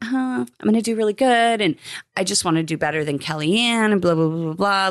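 bubbly, giddy, gushing voice. Retelling a contestant's pre-interview before the helicopter: imitating a giddy, smiley voice. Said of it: "she's all giddy and smiley".

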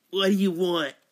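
New York character voice. Playing a summoned spirit answering a call: Big Ange voice. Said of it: "contact the spirit of Angela the Big".

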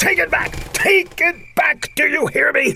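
high-pitched, outraged screaming. In an argument, one character berates the other, screaming. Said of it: "Stop screaming!".

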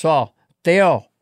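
imitated Nicaraguan accent. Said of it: "Is that how he said it?".

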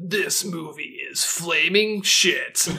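very slow, drawn-out movie trailer narrator voice. Joking about a remake's trailer, imitating the trailer guy: movie trailer voice. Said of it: "trailer voice".

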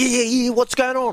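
put-on frantic panic, very high-pitched, rattled off fast. Retelling a message exchange, imitating a panicked Ronan O'Gara. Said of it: "And he's all panicked".

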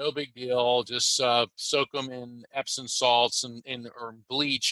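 ordinary delivery

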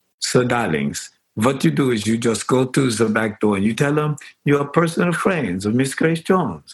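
put-on blend of Hungarian, German and Jamaican accents. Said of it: "in an accent that was reminiscent of [name], [name], and [name]".

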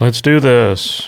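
slow, flat impression voice. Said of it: "you read this in your Zuckerberg voice".

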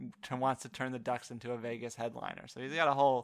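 ordinary delivery

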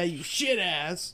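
mocking voice. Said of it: "I did shit ass because I was making fun of him".

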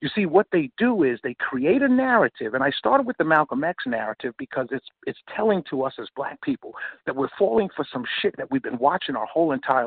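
ordinary talk

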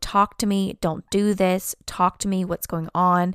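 ordinary delivery

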